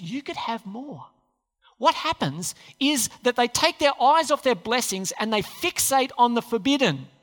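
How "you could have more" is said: much softer tempting whisper. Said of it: "he whispers".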